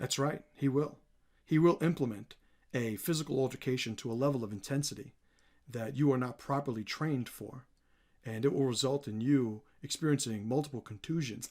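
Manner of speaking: very low, soft, level, flat and deliberate. Showing off your impression before talking about the man himself, do a John Danaher impression. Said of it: "That's my uh, John Danaher impression".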